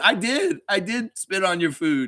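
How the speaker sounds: mock proud tone, slow. Retelling Darko's answer about the spitting: imitating Darko saying it proudly. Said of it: "Darko says proudly".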